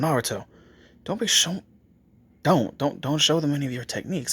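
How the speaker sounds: hushed half-whisper, tripping and stumbling over words. Telling a story where Kakashi pulls Naruto aside: half-whispering as Kakashi. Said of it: "He's whispering that to Naruto".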